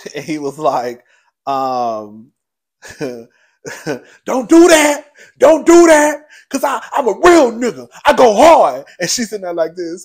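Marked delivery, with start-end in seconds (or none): 3.0-8.8 very loud, very slow, drawn-out hollering. Act out a man at a woman's side while she looks straight ahead, imitating a man yelling. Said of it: "So Safari is yelling at Erica".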